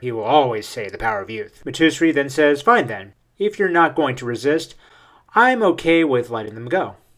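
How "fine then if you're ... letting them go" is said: plain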